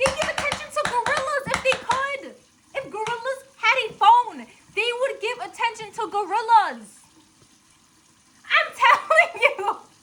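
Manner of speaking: high, heated, worked-up ranting. Worked up and heated while ranting, yelling. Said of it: "I'm yelling, I'm sorry".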